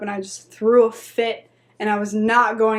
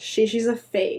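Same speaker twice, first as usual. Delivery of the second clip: normal talking voice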